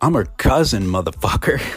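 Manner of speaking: put-on tough-guy tone. Retelling confronting a guy about the speaker's cousin, retelling acting tough. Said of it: "I was trying to be all hard".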